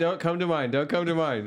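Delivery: put-on nervous, pleading tone. Joking about bathroom stalls, the speaker voices someone in a stall, mock-nervous. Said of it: "is starting to get nervous".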